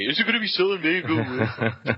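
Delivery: over-the-top hyped TV news announcer delivery. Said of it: "put things in the same hyperbole they would use on C N B C".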